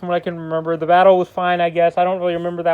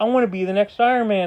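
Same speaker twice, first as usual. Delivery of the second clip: normal talking voice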